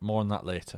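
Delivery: dry sarcastic aside.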